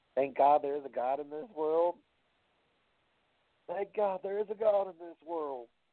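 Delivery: ringside wrestling play-by-play announcer voice. Quoting what J R would say: J R impression. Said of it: "That's my best J R imitation".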